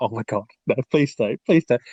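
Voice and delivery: mock scared, frightened, desperate pleading voice. Retelling a horror game moment, imitating a scared plea. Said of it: "and you're like".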